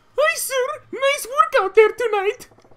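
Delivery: put-on girl voice, very high and loud. A one-man band voicing every role greets a sir; man doing a girl voice. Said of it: "you guys are annoyed by the girl voice?".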